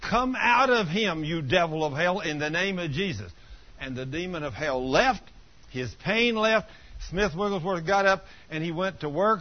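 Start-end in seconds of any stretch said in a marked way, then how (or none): none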